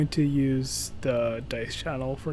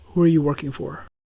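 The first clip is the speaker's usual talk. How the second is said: hushed whisper; 7 dB louder than usual. As they walk away, calling a question after them in a whisper. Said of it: "I do want to whisper".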